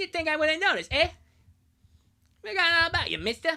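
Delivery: very high, squeaky, loud cartoon voice. Speaker plays an officer stopping someone without a passport: South Park voice. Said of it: "South Park voice is insane".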